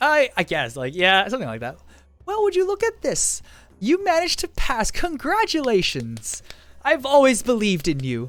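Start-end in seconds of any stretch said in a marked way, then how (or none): 2.3-8.3 put-on old woman voice, very high, swooping. Playing your professor coming up to you: old lady voice. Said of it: "it's like an old lady".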